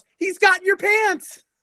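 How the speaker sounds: mock high-pitched, shrill yell. Retelling a line from the episode: imitating a yell. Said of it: "the other one yells".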